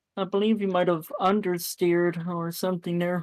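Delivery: ordinary delivery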